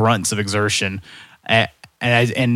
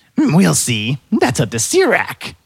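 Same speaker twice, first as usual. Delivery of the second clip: higher voice, slow and swooping; 6 semitones higher than usual. Voicing the collector answering the guard: higher voice. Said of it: "the higher voice".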